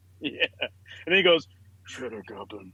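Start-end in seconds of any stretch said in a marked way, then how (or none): 1.9-2.7 half-whispered, very quiet. Retelling how a movie character stares at a commercial: imitating a half-whisper. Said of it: "he just whispers into the T V".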